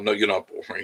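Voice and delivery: ordinary talk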